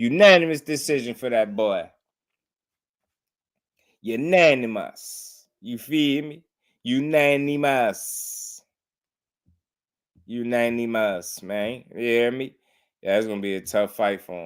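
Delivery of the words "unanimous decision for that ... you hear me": very slow, drawn-out promoter voice, "unanimous" stretched out. Calling a unanimous decision in a fight, in a Leonard Ellerbe voice. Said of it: "in my Leonard Ellaby voice".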